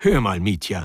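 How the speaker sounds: ordinary delivery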